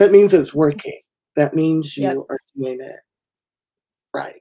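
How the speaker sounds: choked-up, near tears. Speaker talking about burn survivors knowing who they are, close to tears. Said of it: "I'm going to cry".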